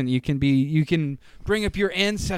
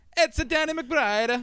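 very high, slow, drawn-out Italian accent; 10 semitones higher than usual. Showing how the challenge phrase is said, in an italian accent. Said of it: "You have to just say it like this".

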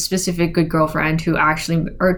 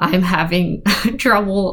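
voice breaking and cracking on the words. Talking about having trouble with meditation homework from therapy, voice cracking. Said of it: "My voice just cracked".

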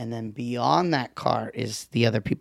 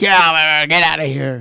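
mock grumpy old man, louder and slower; 3 semitones higher, 8 dB louder than usual. Imagining himself as a grandpa in the story, playing a grumpy old man. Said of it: "I'm being a grumpy old man".

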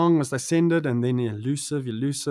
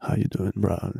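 put-on whiskey-gargling voice, pitched much lower; 6 semitones lower than usual. Retelling a call with Questa, imitating Questa's whiskey-gargling voice. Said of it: "gargling with whiskey since he was like 13".

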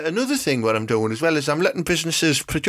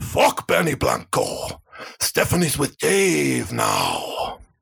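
slow, dragged-out delivery with gritty, rough voice. Showing another speaker an impression of Al Pacino in Carlito's Way. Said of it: "Al Pacino in, in Carlito's Way".

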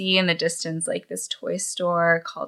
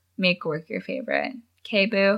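ordinary talk

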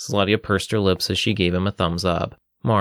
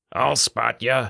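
gruff, grunting dwarf voice; 3 semitones higher than usual. Narrator voicing a dwarf who sits down beside a woman, gruff dwarven voice. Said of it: "a gruff dwarven voice grunted".

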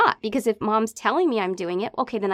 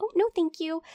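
mock really sweet, high, extra-nice voice; 7 semitones higher, 3 dB quieter than usual. Recalling always declining nicely instead of screaming: put-on really nice tone. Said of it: "In this really nice, like".

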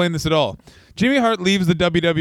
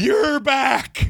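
put-on tearful cry, higher pitch; 9 semitones higher than usual. Retelling how Vince McMahon ran to the ring crying: imitating Vince McMahon crying.

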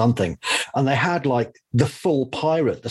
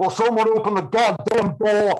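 put-on raised-pitch heavy Texan accent; 9 semitones higher than usual. Ray Harryhausen, kicking at the door downstairs, calls out as Ray Harryhausen in a broad Texan accent. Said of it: "this broad Texan accent".

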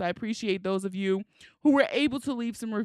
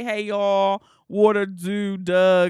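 loud, slow Baltimore accent, "dog" said as "Doug"; 6 dB louder than usual. Showing how the accent slips out when talking: Baltimore accent. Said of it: "sometimes it pop out and it say".

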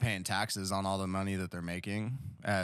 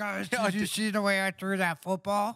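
very high, loud, grating, annoying voice; 12 semitones higher, 6 dB louder than usual. Mocking a football player's voice the others call annoying: Patrick Mahomes impression, annoying voice. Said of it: "He has an annoying voice".

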